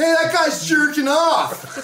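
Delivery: high, slow, loud yelling.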